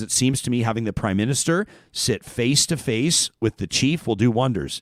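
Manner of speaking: plain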